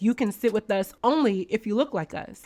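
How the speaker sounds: ordinary talk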